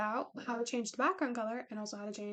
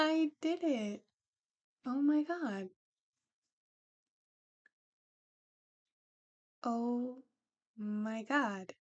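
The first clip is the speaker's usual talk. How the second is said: thrilled, excited, slow, very drawn-out delight. Getting a 3d export to work after trying random buttons: excited.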